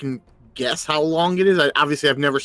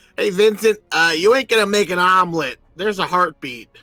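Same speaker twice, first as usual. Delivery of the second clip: raised, hollered call projected across a distance; 4 semitones higher, 4 dB louder than usual. Yelling across to vincent about the egg: yelling across to someone. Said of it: "I'll yell across to Vincent".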